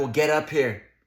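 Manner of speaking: ordinary delivery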